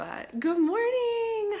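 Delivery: high, slow cracking sick voice.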